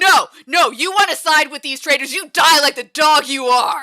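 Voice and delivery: loud, high-pitched, furious shout.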